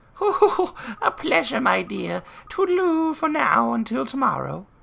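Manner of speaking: put-on terrible, very high, creaky old lady voice. Voicing a character for the other player, in a terrible old woman voice. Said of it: "my terrible old woman voice".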